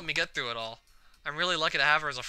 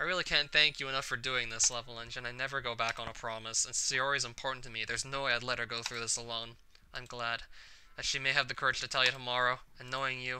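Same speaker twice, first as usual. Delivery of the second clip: normal talking voice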